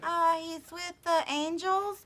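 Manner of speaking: poor, high-pitched fake little kid voice. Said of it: "bad impersonations".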